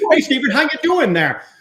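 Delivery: put-on old-fashioned, early-century 1920s way of talking. Asking chat about how people talked back then, trying old-fashioned 1920s talk. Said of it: "I'm gonna try to talk like it".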